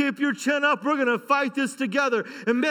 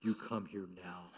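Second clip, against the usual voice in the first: very low, hushed voice in dropped register; 18 dB quieter than usual. Retelling how their mom called them when they were in trouble, imitating mom's lowered voice. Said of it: "my mom lowers her register to".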